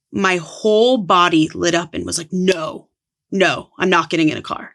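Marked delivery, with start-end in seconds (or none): 2.3-4.5 put-on firm tone with conviction. Retelling refusing friends' ride at midnight: retelling a firm refusal with conviction. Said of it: "I said it like that out loud with conviction".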